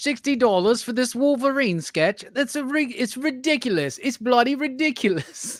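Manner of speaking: put-on British accent. Reacting to a price drop on a Wolverine sketch: put-on British accent. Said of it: "he's in love with the, uh, the British accent".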